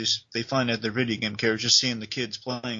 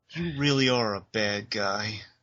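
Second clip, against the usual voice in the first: mock-tearful, acted tearful delivery. Retelling a woman's key line to a listener, imitating her tearful delivery. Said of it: "She says very tearfully".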